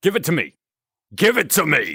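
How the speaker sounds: put-on, in-character mild half-shout. Voicing a character, shouting loudly. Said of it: "sorry for going loud there".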